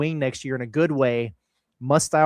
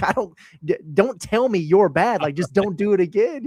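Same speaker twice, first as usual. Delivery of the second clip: play-acted, sarcastic, scolding coach voice, pitched up; 5 semitones higher than usual. Retelling what the coach said to a player: imitating Cal being sarcastic. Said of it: "Cal got really, like, uh, sarcastic about it".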